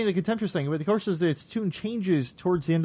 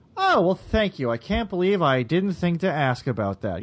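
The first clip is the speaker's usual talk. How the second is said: normal talking voice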